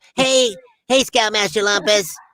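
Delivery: high-pitched blended cartoon character voice. Showing how a cartoon voice was built from two others: Lazlo voice mixing Rocco and SpongeBob. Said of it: "Laszlo was kind of a mixture of Rocco and SpongeBob".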